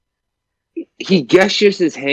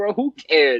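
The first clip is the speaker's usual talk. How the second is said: ordinary talk, nothing marked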